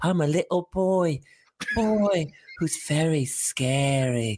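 put-on British accent. Describing terrifying forest footage, mimicking it in a put-on British accent. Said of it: "a British accent with an echo chamber".

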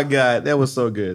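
ordinary delivery

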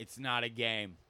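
mock deadpan delivery. Retelling what a lady in a couple answered during a show, imitating a deadpan reply. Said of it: "like just deadpan was like".

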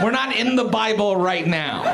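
ordinary talk, nothing marked

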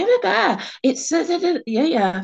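mock very high, frantic, shrieking scream. Retelling a phone call where a friend started screaming at her: imitating someone screaming. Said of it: "she started screaming at me".

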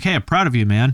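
mock condescending, patronizing tone. Joking about praising a friend who joined a band: mock condescending tone. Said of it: "real condescending".

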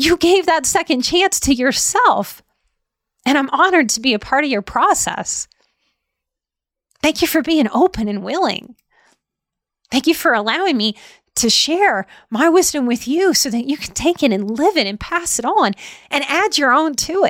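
tearful, heartfelt voice, tearing up. Speaker thanking a listener for being open and willing, tearing up. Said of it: "I think you can hear it in my voice".

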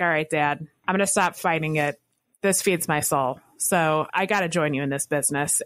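usual speaking voice

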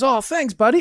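put-on high little kid voice.

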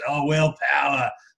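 put-on Australian accent. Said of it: "which he did a really good Australian accent".

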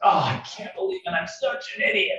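put-on, very high, upset, self-reproaching kid voice. A parent acts out their kid's regret over homework, imitating an upset kid. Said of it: "he's upset with his decision".

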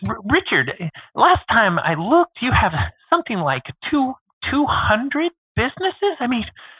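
interviewer voice, pitched way up, swooping wide. Retelling an interview, asking Richard about his businesses: Guy Raz impression. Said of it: "I'm gonna do my best Guy Raz impression here".

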